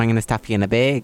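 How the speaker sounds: bad, unconvincing Minnesota accent. Bantering with the other speaker, doing a bad minnesota accent. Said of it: "when you try to do your Minnesota accent".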